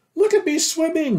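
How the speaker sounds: tiny, very high, squeaky voice. From the middle of a pool, a little one calls out, squeaking. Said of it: "squeaked Roo".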